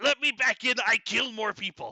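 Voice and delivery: very high, loud shrieking scream. Narrating a scene, voicing someone knocking at the door: loud screaming. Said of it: "a loud voice screaming".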